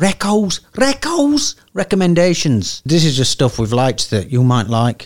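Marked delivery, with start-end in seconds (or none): 0.0-2.8 put-on Scouse Liverpool accent. Introducing the recommendations segment, speaker slips into a Liverpudlian accent. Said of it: "Did you go into a Liverpudlian accent then?".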